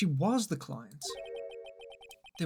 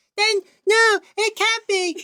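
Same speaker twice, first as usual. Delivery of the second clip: put-on girly voice, much higher, louder, slower; 12 dB louder than usual. Taking over the stream while the other streamer steps away, in a girly voice. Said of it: "I can put on my girly voice".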